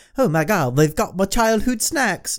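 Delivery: put-on poor British accent. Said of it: "a shitty British accent".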